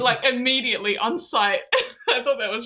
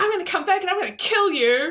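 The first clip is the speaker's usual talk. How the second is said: put-on furious, high-pitched twelve-year-old child voice; 7 semitones higher than usual. Retelling a game opponent's threat: imitating an angry young kid. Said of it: "He sounded like he was twelve, and he was so mad".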